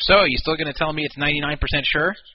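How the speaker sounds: ordinary talk, nothing marked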